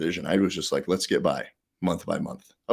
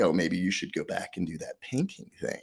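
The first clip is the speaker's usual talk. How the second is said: mock talking down, condescending and patronising tone; 6 dB quieter than usual. Retelling what the new bank president said at the firing: imitating a condescending tone. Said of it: "real condescending".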